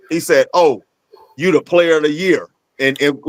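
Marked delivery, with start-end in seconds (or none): 0.5-2.4 put-on, sarcastic, ribbing tone of mock praise. Retelling a coach's words to a player after a scrimmage: imitating sarcastic praise. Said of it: "in like of a, a sarcastic way".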